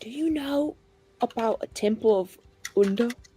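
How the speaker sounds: high, close, leaning-in half-whisper. A character leans down to half-whisper in her ear, half-whispering. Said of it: "lean down and whisper in her ear".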